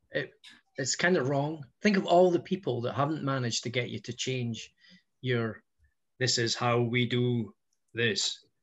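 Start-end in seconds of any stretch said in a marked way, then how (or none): 6.1-8.3 put-on slow, dragged-out Austrian accent. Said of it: "it's my Arnie accent".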